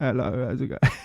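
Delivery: put-on celebrity-style telephone voice. Retelling how they used to talk to girls on the phone: Johnny Depp voice. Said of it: "The Johnny Depp voice".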